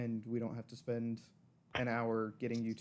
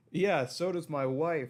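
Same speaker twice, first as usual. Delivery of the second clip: put-on very drunk, loud, drawn-out hollering yell; 5 semitones higher, 5 dB louder than usual. Describing a bar scene, a patron yells out in a very drunken yell. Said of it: "yell out in a very drunken tone".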